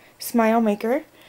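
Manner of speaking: usual speaking voice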